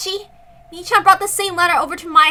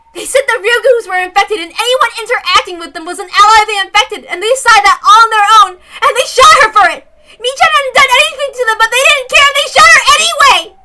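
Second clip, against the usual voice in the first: raised, impassioned, much more emotional outburst; 4 semitones higher, 7 dB louder than usual. Retrying a character's line while reading aloud: much more emotional. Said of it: "much more emotional".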